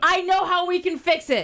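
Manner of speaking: loud excited yelling. Teasing a solution that is coming up next: excited shouting. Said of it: "You're screaming at me".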